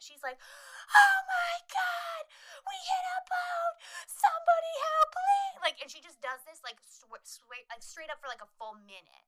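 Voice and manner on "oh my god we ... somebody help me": put-on very high, very long, shrill panicked scream. Retelling the girl who fell off the skis, imitating someone screaming. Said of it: "she is screaming like nobody's fucking business".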